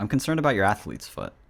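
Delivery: put-on grave, fake serious tone. Joking with another speaker about their skin infections: mock serious tone. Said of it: "take, like, a serious tone for a second".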